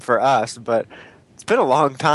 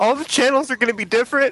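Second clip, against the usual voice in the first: freaking out, wailing high. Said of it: "he's like".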